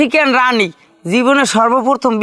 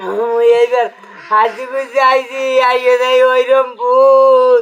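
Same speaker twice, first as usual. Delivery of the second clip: slow, sobbing, pleading crying voice. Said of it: "ভাই ওই কান্দে না".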